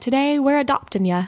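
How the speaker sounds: bad put-on Northern English accent. Recalling what a woman from Northern England said, bad Northern English accent. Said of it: "That was a shitty attempt at the accent".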